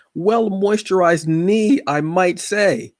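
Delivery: slow, very high cracking voice break on knee. Describing own shorts, voice cracking on the word knee. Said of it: "I don't know why my voice cracked when I said knee".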